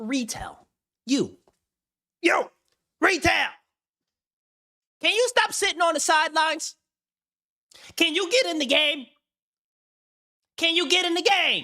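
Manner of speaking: exasperated, irritated, very high-pitched nagging tone. Speaker calls out retail directly after burning through a plan; irritated. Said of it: "Now I'm getting irritated".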